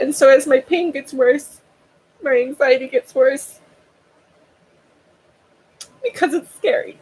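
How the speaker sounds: crying through the words. Speaker explains what their doctors have told them, while crying. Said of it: "Sorry, you came in when I'm crying".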